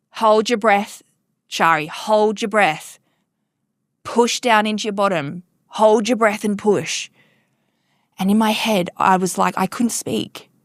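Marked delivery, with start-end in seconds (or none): 0.1-7.0 put-on stern, commanding voice. Retelling a voice behind shari giving orders as she pushed, imitating a stern commanding voice. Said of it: "a stern, commanding voice behind me".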